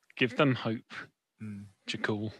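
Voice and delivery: very soft, quiet, low murmur. In a role-played scene, a character speaks into Jakul's ear very quietly. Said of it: "I'll very quietly say in Jakul's ear".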